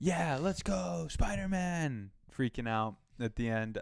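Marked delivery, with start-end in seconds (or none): 0.0-2.1 high, slow mock scream. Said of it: "just screaming".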